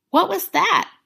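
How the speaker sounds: out of breath. Phil asks Natasha right after pulling away from their kiss, breathless. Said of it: "Phil asked breathlessly".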